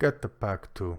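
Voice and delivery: ordinary talk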